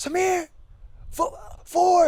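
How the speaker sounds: play-acted, very high, frightened yell. Retelling how Dom yelled a warning on the course: imitating Dom yelling scared. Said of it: "he actually yelled".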